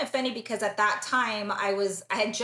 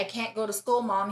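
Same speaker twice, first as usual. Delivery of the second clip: put-on scared child voice, frightened pleading tone. A mother quotes her son when she found him at home, imitating a terrified child. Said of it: "And he was like really terrified".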